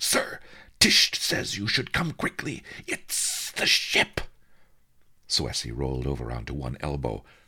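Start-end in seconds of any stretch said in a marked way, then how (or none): 0.0-4.2 very high, bubbling, fizzing excitement. Lucky ka, the young tech and junior pilot, calls over the comm: fizzing with excitement. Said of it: "His voice fizzed with excitement".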